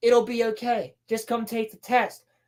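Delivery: normal talking voice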